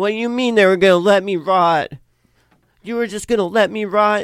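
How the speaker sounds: loud, high-pitched, accusing yell. Narrating to the players, the speaker voices Lenore yelling out to break the silence. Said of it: "she like just yells out like".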